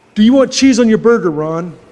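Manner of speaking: plain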